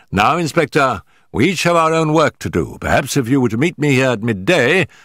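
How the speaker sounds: ordinary delivery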